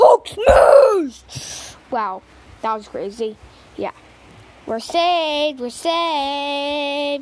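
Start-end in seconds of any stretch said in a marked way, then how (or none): 0.0-1.8 very loud, pitched-up yelling shout. Playing a story where a character turns into Hulk: Hulk voice. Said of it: "he turns into Hulk".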